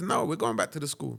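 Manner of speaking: put-on heavy Jamaican accent. Quoting the granny in a childhood story, thick Jamaican accent. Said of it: "in a thick Jamaican accent".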